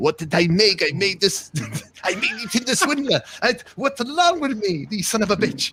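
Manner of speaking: put-on Israeli accent, voice pitched way up. Retelling what a conned lady said, in an Israeli accent. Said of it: "in the Israeli accent".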